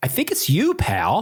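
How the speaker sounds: slow, high, drawn-out, disgusted tone. Retelling the tour guide's reply in the data center: imitating a disgusted reply. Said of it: "he looks at me with disgust".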